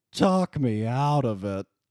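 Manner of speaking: comic, cowardly lion character voice. Acting out a film dialogue as the Cowardly Lion: Bert Lahr's Cowardly Lion voice. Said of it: "I'd love to be Bert Lahr's Cowardly Lion".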